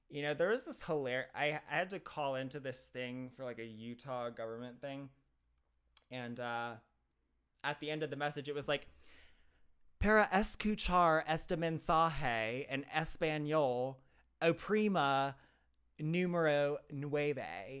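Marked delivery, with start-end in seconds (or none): 10.0-17.8 Spanish said very slowly with bad heavy English accent. Retelling a government phone message: imitating terrible English-accented Spanish. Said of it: "that accent was terrible".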